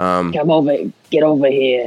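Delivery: put-on Bronx accent. Quoting what the speaker says to friends to call them over: Bronx accent. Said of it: "That's my Bronx accent going".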